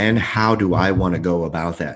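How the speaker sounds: ordinary delivery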